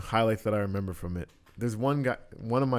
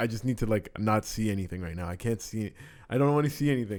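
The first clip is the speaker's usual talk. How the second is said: usual speaking voice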